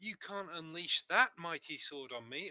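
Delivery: high, put-on feminine voice. Role-playing a character's line before a sword move, in a put-on feminine voice. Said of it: "I shall say in my best feminine voice".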